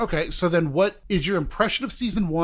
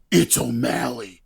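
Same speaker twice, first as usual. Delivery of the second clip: menacing mean-guy voice, low, rough and gravelly; 5 semitones lower than usual. Fan describes how a show's season ended; Caboose's scary voice. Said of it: "a scary voice".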